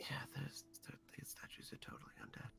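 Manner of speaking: very soft whispered voice, in character. Leaning in to tell a companion about the statues: whispering in character. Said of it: "I lean in and whisper to Eve".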